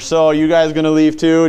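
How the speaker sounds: loud, supremely cool, confident swagger. Imagining a question asked like John Wayne, mock-cool and confident. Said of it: "Just kind of the confident, cool one here".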